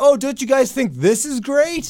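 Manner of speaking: high, mocking, sarcastic, tongue-in-cheek tone. Showing how Daniel Bryan talks on the mic: imitating Daniel Bryan sarcastically. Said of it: "sarcastic, tongue-in-cheek, like".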